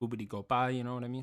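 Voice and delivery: put-on Italian accent. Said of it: "you're putting a little Italian to it".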